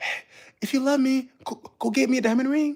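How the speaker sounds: high-pitched stage half-whisper. Acting out imagined girls talking to a young man: imitating girls half-whispering. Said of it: "these pretty looking girls whispering".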